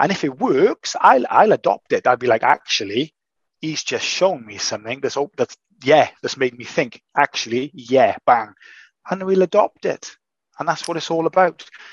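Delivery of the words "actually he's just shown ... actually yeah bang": ordinary talk, nothing marked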